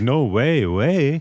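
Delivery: put-on Canadian accent. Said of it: "talking in a Canadian accent".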